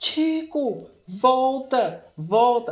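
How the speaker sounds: mimicked shouting. Retelling how their mother called chico back from far away, imitating her shouting. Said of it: "minha mãe gritando".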